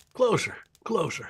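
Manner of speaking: put-on elderly old man voice. Acting out a scene with other performers, in an old man voice. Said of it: "it's me and my old man's voice".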